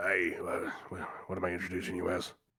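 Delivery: low, hushed, discreet half-whisper. Game master voices a guard half-whispering to the party before presenting them to the king. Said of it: "He'll kind of whisper to you".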